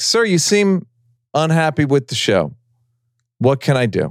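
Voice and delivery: courteous, polite customer-service tone. Retelling how Jerry Seinfeld handles a heckler: imitating Jerry Seinfeld's customer-service tone. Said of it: "Jerry Seinfeld treats it like a, a, uh, customer service issue".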